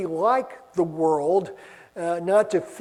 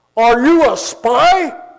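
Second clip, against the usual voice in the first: put-on very loud, booming, thick foreign-accented English; 5 semitones higher, 9 dB louder than usual. A speaker retells a stranger on a bus questioning them, imitating booming accented English. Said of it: "this booming voice, heavily accented English".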